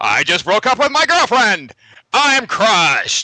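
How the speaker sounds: booming, very high, telephone-like voice. Retelling a phone call from a buddy: movie phone guy voice. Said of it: "he actually really talks like that too".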